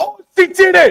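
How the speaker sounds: thrilled shriek, pitched way up, very high. Match commentator reacts as she gets it done in time, excited yelling. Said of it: "Sorry for yelling".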